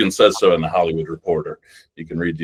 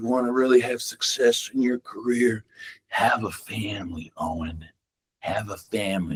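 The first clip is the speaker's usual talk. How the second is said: put-on hushed character voice with the English accent dropped; 4 semitones higher, 7 dB quieter than usual. Retelling a cast member's advice to him, spoken in his Rick voice. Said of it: "he's talking in his Rick voice".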